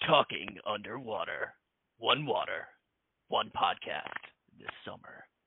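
slow film-trailer announcer voice. Podcast host announcing the show's name, in a movie trailer voice. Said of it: "Sounds like a movie trailer".

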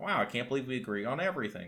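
normal talking voice

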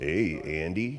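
drops into a very low, deep baritone. Describing a movie's voices, imitating a deep baritone: Morgan Freeman deep baritone. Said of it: "deep baritone".

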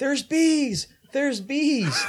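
very high, very slow, drawn-out alarmed screaming. Retelling a movie scene where Tucker flees bees: imitating Tucker screaming. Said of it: "Tucker's screaming".

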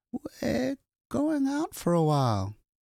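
very high, unsteady, wavering, drawn-out call. Janet calls up the stairs to the children, in Janet's wavering voice.

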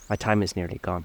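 plain

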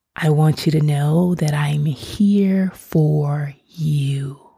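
dropped tone, words slowed right down, calm and soothing. Showing how it sounds when they drop their tone, lower, slower voice. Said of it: "I drop the tone of my voice and I slow down the pace of my words".

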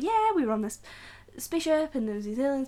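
mock breezy, high-pitched, quickly rattled-off delivery.

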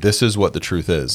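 ordinary talk

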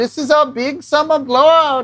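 put-on Swedish accent. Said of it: "his Swedish accent saying".

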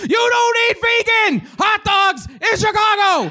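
play-acted, very high, shrill, furious exploding scream. Retelling how he exploded at the people asking for directions, retelling a furious scream. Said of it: "I exploded and I screamed at them".

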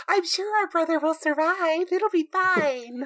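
very high, slow, eerie, creepy twin voice. Picturing the twins standing there speaking: creepy twin voice. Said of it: "creepy twins".

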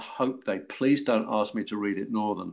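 ordinary delivery

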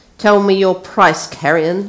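stern and severe tone. A lord demands that carrion name his price, speaking sternly. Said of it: "said the lord sternly".

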